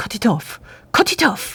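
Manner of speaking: put-on British accent, very serious tone. Retelling a character's line in a play: british accent, very serious. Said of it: "영국 발음으로 진짜 심각하게 얘기해요".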